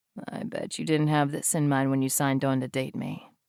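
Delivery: sleepy, gruff, sexy voice. A man just woken by the alarm teases the woman he dates; sexy, sleep-gruff voice. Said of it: "in his sexy, sleep-gruff voice".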